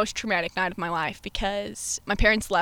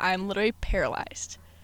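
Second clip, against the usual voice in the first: ordinary delivery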